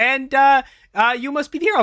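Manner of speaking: put-on upper Midwest Minnesota accent. Voicing Hector turning to Chad: Hector's Minnesota accent. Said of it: "Hector sounds like he's from Minnesota".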